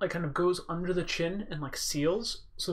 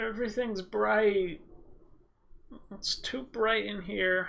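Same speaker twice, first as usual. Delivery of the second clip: woozy, dazed, groggy, just-woken voice; 3 semitones higher than usual. Narrator voices Jessie staggering to her feet after a head injury, dazed Jessie voice. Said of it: "stagger to her feet. / So you hear kind of [name] like, stagger to her feet. / My head hurts".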